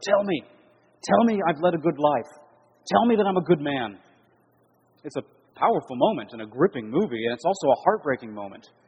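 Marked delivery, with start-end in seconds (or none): 0.0-4.0 mock sheer desperation, high and slow. Retelling a movie scene where a man turns to his wife; acting out sheer desperation. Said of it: "with a note of sheer desperation in his voice".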